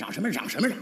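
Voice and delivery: low, urgent, suppressed hiss under the breath.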